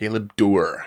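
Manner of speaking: Galebdur with weight on the last syllable, dur. Repeating the name Galebdur after checking its pronunciation, stress on final syllable dur. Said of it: "emphasis on the door".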